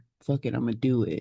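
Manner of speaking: mock aggressive, combative attitude. Imitating how men handle emotions, with more aggression: imitating aggressive attitude. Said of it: "maybe more aggression".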